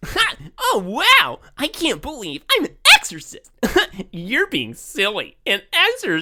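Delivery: put-on very high, swooping, overacted stage child actor voice. Mocking a request to read lines like a child in a Broadway play, overacted precocious child voice. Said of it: "like you're playing a precocious eight-year-old in a Broadway play".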